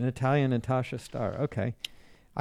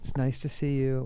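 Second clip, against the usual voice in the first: put-on British accent; 3 dB quieter than usual. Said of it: "That's the British".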